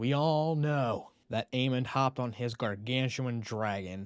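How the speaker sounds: usual speaking voice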